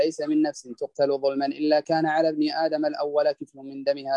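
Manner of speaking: ordinary delivery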